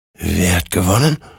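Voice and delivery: in a whisper. Hector, sliding onto the warhorse beside the ensouled one, asks, whispered. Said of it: "flüsterte Hector".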